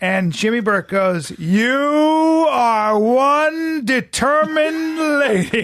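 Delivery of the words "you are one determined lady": drawn-out slow put-on drawl, higher and louder. Retelling what a friend said to a slow-walking lady: dragged-out delivery imitating Jimmy Burke. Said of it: "drags out".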